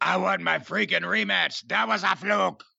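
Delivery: odd, creaky impression voice.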